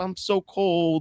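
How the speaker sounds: put-on very high, pitiful, pleading old woman voice. Retelling a show's opening scene, an old woman at the window: imitating an old woman pleading. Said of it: "she's like".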